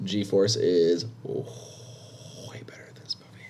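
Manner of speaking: quiet, hushed whisper.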